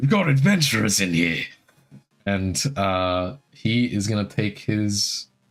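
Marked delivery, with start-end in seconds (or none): 0.0-1.4 loud, shouted in-character yell. Voicing an enemy running out of the fog, yelling to others. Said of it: "he yells out".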